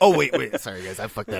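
mock voice, mocking tone. Teasing a co-host about how he fumbled a line: mocking imitation of Brian. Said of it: "I'm just making fun of the way you said it".

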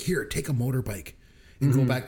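ordinary talk, nothing marked

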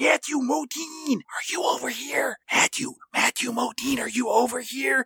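slow, high-pitched, half-whispered calling out. Recapping a film scene of a crew searching for a man, half-whispering. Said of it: "calling out for Matthew Modine with whispers".

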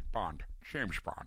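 breathy, near-whispered leading-man voice. Joking about keeping an actor in a studio: Sean Connery impression. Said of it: "Sean Connery, ladies and gentlemen".

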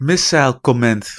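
attempted very thick Dutch accent. Comparing uk and us words, trying a very thick dutch accent. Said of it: "I was trying to do a very thick Dutch accent".

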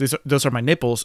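ordinary talk

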